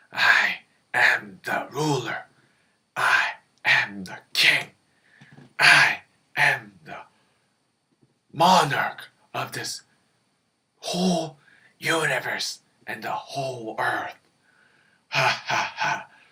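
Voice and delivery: deep, gloating, boastful villain or devil voice. In a puppet show, the devil boasts to the other characters; boastful devil puppet voice. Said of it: "this is Devil, / and he always floats around this fire here, and then he's very straightforward but manip manipulative, / and then he's very straightforward but manip manipulative, / this is Devil".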